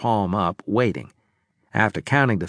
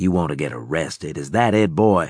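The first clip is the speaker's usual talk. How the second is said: snake-like voice, sliding out; 5 semitones lower than usual. Narrator reading Claver's line to a boy among fallen guards: snake-like voice. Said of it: "Claver said in a snake-like voice".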